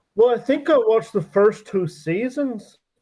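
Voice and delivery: put-on Irish accent, loud and high. Saying how many seasons of the show they watched, in a put-on Irish accent. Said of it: "that sounds a bit like an Irish accent".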